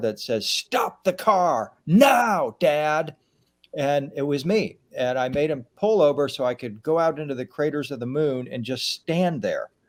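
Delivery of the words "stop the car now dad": acted out, very slow, booming, drawn-out voice. Retelling a family road trip, speaker quotes their younger self from the car's back: booming voice. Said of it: "a booming voice from the back of the car".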